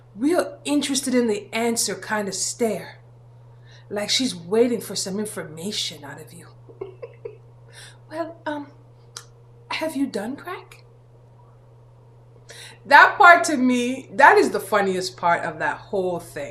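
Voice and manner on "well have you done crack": hushed, breathy, very soft, curious near-whisper. Describing a woman delivering a question, the speaker imitates her soft voice. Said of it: "she has this really soft voice".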